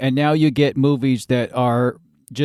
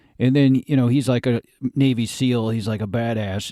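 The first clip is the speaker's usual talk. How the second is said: ordinary talk, nothing marked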